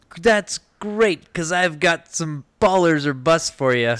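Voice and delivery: loud yelling. Host introducing his sponsored segment Baller or Bust, yelling into the microphone. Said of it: "Stop yelling into the microphone".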